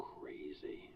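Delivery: crazy hit hard with heavy stress. In a role-play scene, a character answers a question, stressing the word crazy. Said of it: "Why would you emphasize the word crazy?".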